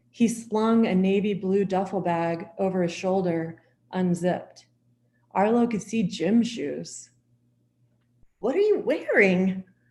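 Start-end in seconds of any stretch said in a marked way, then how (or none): 8.4-9.6 voice breaking and cracking, nervous. Arlo reacts as Cal walks out the door before the bank robbery: voice cracking. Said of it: "Arlo's voice cracked".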